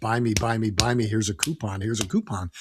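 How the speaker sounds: usual speaking voice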